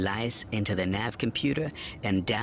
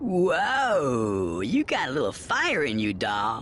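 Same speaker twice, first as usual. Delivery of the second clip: appreciative, admiring, slow sing-song whoa; 4 semitones higher, 4 dB louder than usual. Pomat, after Xana challenges him, responds to her appreciatively. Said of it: "Pomat said appreciatively".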